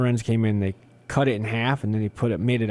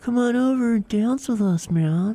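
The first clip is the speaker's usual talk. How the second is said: laid-back put-on hippie voice, very high, very slow; 12 semitones higher than usual. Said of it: "they're very mellow".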